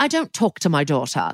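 put-on posh accent. Retelling what a character says in her shop: imitating a posh accent. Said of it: "'cause she's got a very posh accent".

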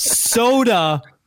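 SODA stressed, pitched high.

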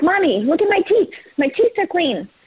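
high-pitched pet cat voice. Imitating the affectionate cat after its dental: voicing the cat. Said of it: "he's like".

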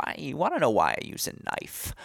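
animated cartoon supervillain voice. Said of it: "I almost did the impression there".

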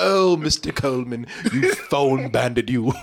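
low, faux British accent. Quoting a woman who phoned them, in her faux British accent. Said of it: "she had this faux British accent".

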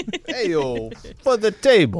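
imitated, put-on New Jersey accent. Co-host repeating the producer's version of the line, imitating Emily's Jersey accent. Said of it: "her Jersey accent".

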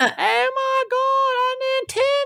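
put-on shrill, excited, very high Southern accent, "my" drawn out. Retelling getting a first nintendo as a little boy, in a thick southern accent. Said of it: "because I had a really thick Southern accent".

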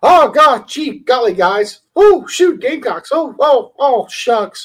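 pitched way up and stretched. Imagining how cheerful posters talk: Mickey Mouse voice. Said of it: "you picture 'em talking like Mickey Mouse".

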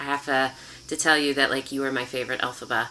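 ordinary talk, nothing marked

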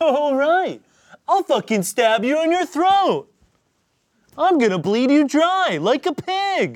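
very high, loud, squeaky dinosaur voice. Told the voice now sounds more accurate, the speaker continues in Barney voice. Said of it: "You've grown into the voice".

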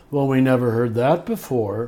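ordinary delivery

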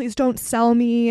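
loud, begging, crying voice through sobs. Retelling what a drugged young woman pulled over by cops said, imitating someone crying. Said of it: "she was like crying and like saying like".

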